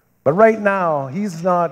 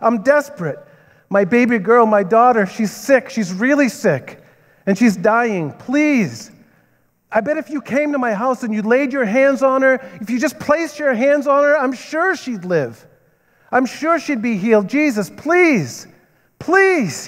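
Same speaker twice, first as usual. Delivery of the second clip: put-on desperate pleading, higher pitch; 8 semitones higher than usual. Retelling a father begging Jesus to heal his dying daughter: Jairus pleading, acted. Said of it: "He's pleading to him".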